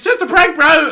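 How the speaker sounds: play-acted whining shout, top of voice, high pitched. Reading a script about Sam Pepper's response, whiny Sam Pepper scream. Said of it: "at the top of his whiny cuntish voice".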